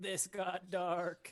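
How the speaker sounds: high, loud, bleating sheep voice. Giving a dying character's final words in the sheep voice. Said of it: "in the sheep voice".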